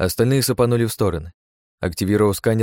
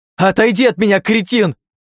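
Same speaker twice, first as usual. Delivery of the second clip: very high, loud shriek with voice cracking; 12 semitones higher, 7 dB louder than usual. A young woman yells at the man who nearly killed her, voice breaking into a shriek. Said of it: "Голос Скайлер сорвался на виск".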